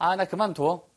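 normal talking voice

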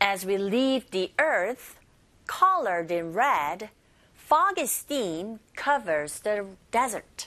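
very slow, careful phrase-by-phrase reading with pauses.

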